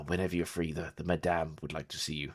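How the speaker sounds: speaking in a whisper. Narrating a scene, voicing a mysterious stranger passing on a message, whispering. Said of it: "he's going to whisper like".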